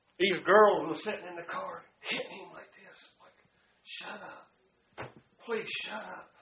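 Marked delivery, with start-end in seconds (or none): 3.9-6.3 mock hushed, scared, frightened whisper. Retelling girls in a car hitting a man, the speaker is imitating scared girls. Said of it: "They was afraid".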